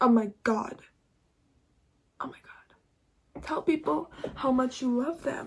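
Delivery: tearful speech while crying. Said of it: "I didn't think I was gonna cry".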